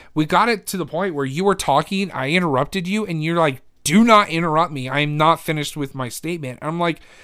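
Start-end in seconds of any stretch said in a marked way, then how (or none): none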